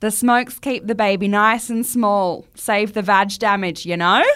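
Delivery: put-on Australian accent. Reading out an overheard quote to a co-host, in an australian accent. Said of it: "I need to do the accent. It's Australian".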